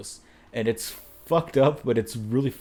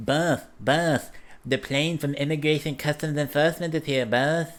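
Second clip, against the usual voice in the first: put-on talking in a little baby voice; 4 semitones higher than usual. Imitating a cartoon vice president character talking to his boss: J D Vance baby voice. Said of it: "how fucking funny that baby voice is".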